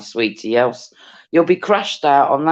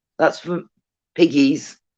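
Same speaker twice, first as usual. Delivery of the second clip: ordinary talk, nothing marked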